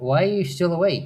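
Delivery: gently scolding tone.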